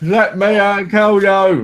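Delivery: very slow, loud, drawn-out high screaming. Retelling how Tash screamed at the TV during a game: imitating someone screaming. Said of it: "Tash was screaming at the T V".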